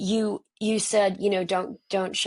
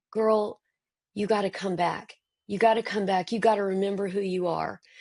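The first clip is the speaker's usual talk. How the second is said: put-on heavy Southern accent. Acting out what friends say to you: heavy Southern accent. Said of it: "talking in such a heavy Southern accent".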